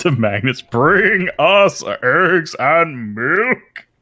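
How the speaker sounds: booming, loud, high dragon shout voice. Joking about dragons making people do their grocery shopping: dragon voice. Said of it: "They just start slurping in their dragon voice".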